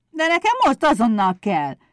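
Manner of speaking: stubbornly defiant shout, high-pitched. Pumukli insisting to Éder, shouting defiantly. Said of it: "Kiabált dacosan Pumukli".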